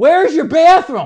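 loud high yell. Retelling running into a bar at night and yelling to the man there; retelling a yelled question. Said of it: "So I just yell".

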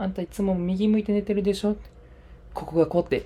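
choppy, broken Japanese. Recalling a massage, the speaker imitates the masseuse's chatter, broken-language rapid-fire talk. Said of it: "その片言マシンガントーク".

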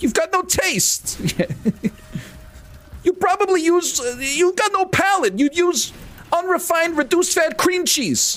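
very high, irate New York man's angry outburst. Doing the only impression they're good at, angry New York man impression. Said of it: "It's the only impression I'm good at".

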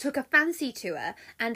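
ordinary delivery, nothing marked

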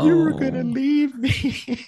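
mock crying, very high and drawn out. Retelling own childhood words to parents: imitating own past crying. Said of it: "and I was, like, crying, like".

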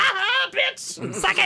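mock shrill, very high, drawn-out, triumphant gloating cackle. Retelling laughing as someone's hair falls out, acting out a cackle. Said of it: "I cackled".

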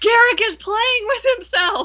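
play-acted, very high shout at full volume. Retelling her husband's outburst at the con with the doll, retelling a loud shout. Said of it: "as loud as he can say".

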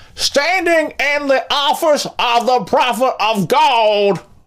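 very high-pitched, loud yelled delivery. Describing a clip of Kenneth Copeland with his hype man, act out the shout, imitating Kenneth Copeland yelling out. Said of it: "he yells out".

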